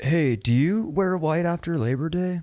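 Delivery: deliberate, slow, drawn-out, prodding quizzing voice. Retelling what someone asked the other day: imitating someone's questioning voice. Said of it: "Do the voice".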